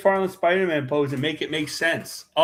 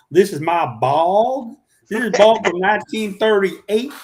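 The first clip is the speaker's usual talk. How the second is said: really thick Southern accent, loud and high; 7 semitones higher, 6 dB louder than usual. Showing how to talk while drawing: really heavy Southern accent. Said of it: "speak in a really heavy Southern accent".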